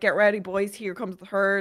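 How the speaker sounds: ordinary talk, nothing marked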